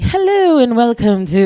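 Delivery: animated Caribbean news-reading voice. Retelling how the Caribbean news was read on air: animated Caribbean news-reading voice. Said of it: "And it's very animated".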